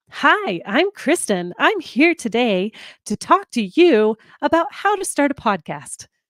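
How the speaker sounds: put-on announcer-style radio voice, slow and swooping. Host demonstrates what she means by a radio voice behind the mic, radio voice. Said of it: "That is a radio voice".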